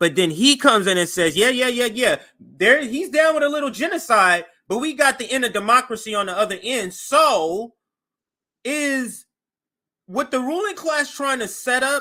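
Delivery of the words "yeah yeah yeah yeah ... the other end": dismissive scoff with the voice rising in pitch. Imitating what a man says when he comes in: imitating him, voice going up. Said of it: "You notice when my voice go up?".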